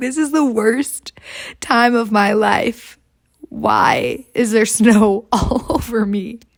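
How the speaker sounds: put-on crying. Recounting a bad day skiing with friends, imitating own crying. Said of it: "I'm like crying, like literally crying".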